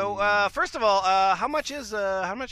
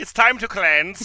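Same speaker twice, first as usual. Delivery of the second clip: put-on Swedish-accented delivery; 4 dB louder than usual. Repeating a line someone once said to them: Swedish accent. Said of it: "They said it in a Swedish accent".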